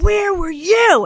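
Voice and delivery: loud yelling, pitched very high. Retelling yelling right back at a man who yelled at her first, retelling a yell. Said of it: "I just started yelling right back at him".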